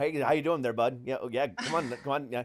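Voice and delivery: imitated Canadian accent. Describing a guest from Ontario they interviewed, the speaker imitates an Ontario accent. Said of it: "that was from Ontario".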